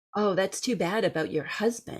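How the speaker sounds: ordinary talk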